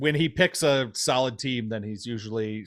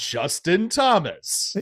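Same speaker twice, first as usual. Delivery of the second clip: pitched-up voice sounding very badly edited; 5 semitones higher than usual. Imitating a friend announcing his pick: imitating Rich's worst edited voice. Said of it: "In the worst edited voice ever".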